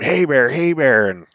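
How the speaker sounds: high scream. Retelling screaming at a bear by the boat: imitating own scream. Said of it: "I just screamed".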